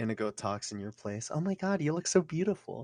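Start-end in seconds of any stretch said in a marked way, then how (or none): 1.3-2.9 high, faked woman's voice. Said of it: "Just fake a woman's voice".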